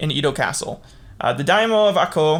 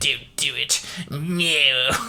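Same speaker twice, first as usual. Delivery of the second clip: put-on very slow old-man voice, "no" long and stretched; 2 semitones lower, 3 dB quieter than usual. Retelling an attack on an old official, Darth Sidious voice. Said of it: "Kinda like Darth Sidious".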